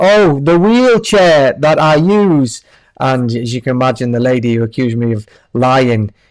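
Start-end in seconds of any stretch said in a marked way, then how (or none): 0.0-2.6 put-on very loud, slow, deliberate, high-pitched voice. Speaker recounts answering a man from his old company about his wheelchair: retelling saying it loudly. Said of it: "So I very loudly said".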